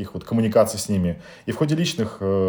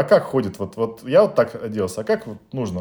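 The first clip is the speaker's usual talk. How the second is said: plain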